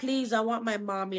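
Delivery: mock scared, tearful, crying, pleading tone. Retelling a scene from the story where the girl begs: imitating a scared crying plea. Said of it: "she's scared and she's crying her eyes out".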